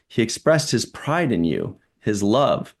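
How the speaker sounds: plain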